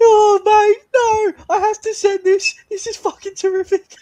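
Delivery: very high, loud outburst, octaves up. Reacting to a ripper over from Dwarcius with Sticks, voice up about three octaves. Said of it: "you've gone up about three octaves".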